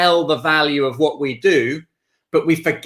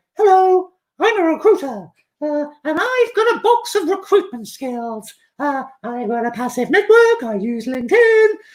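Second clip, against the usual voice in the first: squeaked out at very high pitch; 12 semitones higher than usual. A recruiter giving a talk acts out a recruiter meeting a client, Mickey Mouse impression. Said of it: "That was my Mickey Mouse impression".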